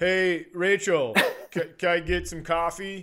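flat, slow, robotic reading. Showing how they would read a sitcom line: robotic line reading. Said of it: "I'm just robotic".

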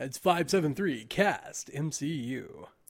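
radio announcer style voice. Repeating the podcast call-in number on request, announcer voice. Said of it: "I feel like you should do that in more of like an announcer voice".

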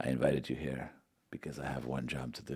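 very quiet, low mob-boss murmur. Imagining a hired man welcoming someone: Godfather-style Miguel Angel Jimenez impression. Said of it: "It'd be very much like The Godfather".

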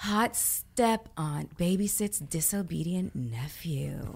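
most sultry, sexual, seductive voice possible. Asked to read video titles in their most sexual voice: sultry, sexy voice. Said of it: "Please read it in your most sexual voice? All right, let me try it".

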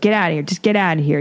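put-on rude, dismissive tone. Retelling a boss ordering the speaker out: imitating a rude, dismissive boss. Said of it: "He was very, you know, rude and dismissive".

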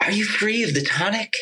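light, high-pitched Southern voice. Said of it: "he's got this like Southern voice, but like real kind of light and soft".

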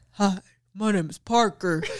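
put-on deep, low, manly voice. Retelling a toddler introducing himself to a visitor; imitating Parker's deep voice. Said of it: "if he did not make his voice so deep".

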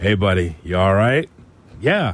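gentle, soft put-on bedroom voice. Speaker imitates how Cap checks on his partner: Cap's bedroom voice. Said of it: "There's a bedroom voice of Cap".

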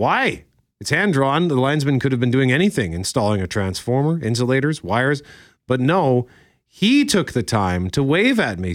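ordinary talk

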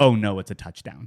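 ordinary talk

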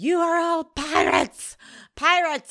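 very high, very loud, shrill shrieking tirade. Mocking a TV character's big monologue, imitating Logan screaming. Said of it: "I don't need him screaming".

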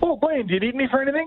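high, breezy, casual offhand tone.

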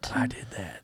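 very quiet, airy, barely voiced whisper. Answering a request for an impression: airy Joe Biden impression. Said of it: "Can I get your best Joe Biden impression?".

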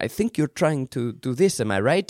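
put-on French accent. Speaker quotes a man giving an actor notes, in a French accent. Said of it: "in his French accent".

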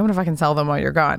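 fast joking tone. Retelling a threat to sell someone's motorcycles: a quick joking remark. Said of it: "I said it really quickly, jokingly".

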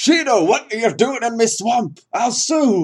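shrill, loud, deliberately bad delivery. Joking about Shido meeting Shrek, quoting Shrek in a bad Shrek impression. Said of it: "That was a terrible Shrek impression".

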